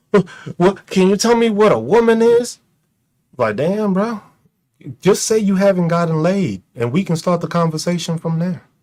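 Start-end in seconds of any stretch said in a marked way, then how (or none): 0.1-2.6 sneering, derisive mock tone. Imitating Republicans asking a question, mocking imitation of a Republican. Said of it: "Republicans are always the ones talking about".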